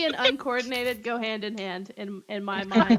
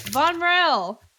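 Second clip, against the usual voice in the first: loud, high call projected into the distance; 6 semitones higher, 6 dB louder than usual. Showing how they call a name into the ether; calling out loudly. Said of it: "I'll call out like loudly".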